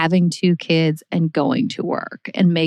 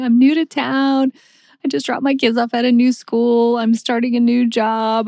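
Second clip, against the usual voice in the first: put-on, high, teary, tearful crying voice; 6 semitones higher than usual. Retelling pleading to a police officer after being pulled over: retelling crying words. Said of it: "And I was just crying".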